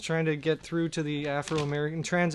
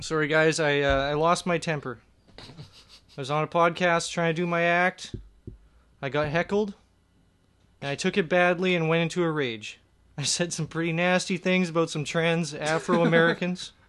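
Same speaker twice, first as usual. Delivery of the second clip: normal talking voice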